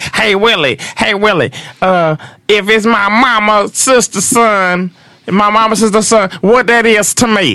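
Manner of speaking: odd, very high-pitched put-on voice. Retelling how a man quizzed someone about relatives, imitating a weird voice. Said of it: "he had this weird voice".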